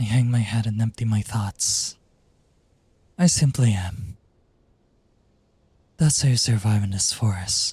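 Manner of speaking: depressed, deranged, breathy character voice. Voice acting a character, in a depressed, breathy character voice. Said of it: "depressed, deranged, breathy characters".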